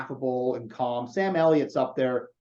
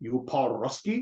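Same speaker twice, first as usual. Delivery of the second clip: heavy, thick Scottish brogue laid on throughout; 3 dB quieter than usual. Quoting a movie's reply to Alec Baldwin's Russian line, in a thick Scottish accent. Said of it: "the response with the thick Scottish accent".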